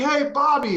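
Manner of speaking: shouting. Retelling how the head trainer called out across the room: imitating someone yelling. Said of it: "he yells at me".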